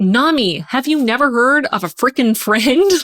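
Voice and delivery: mock yelling, high. Speaker recalls reading and acts out retelling yelling at a book. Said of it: "yelling at the book like".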